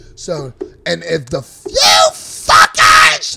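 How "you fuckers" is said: put-on shrill yell, higher and louder. Retelling how his mother yelled at the kids: imitating mother yelling. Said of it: "that's how my mother talked".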